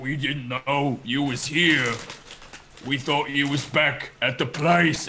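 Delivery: slow, monstrous ogre voice.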